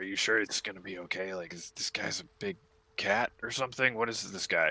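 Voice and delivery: hushed whisper. Game master voicing guards who turn to Yix about Tyrion, whispering. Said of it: "They turn like whispering to Yix".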